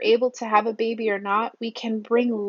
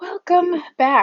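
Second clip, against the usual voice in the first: high voice breaking and cracking; 8 semitones higher, 4 dB louder than usual. Opening part two of a birth story video, welcoming viewers back: voice cracking. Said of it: "my voice just cracked there".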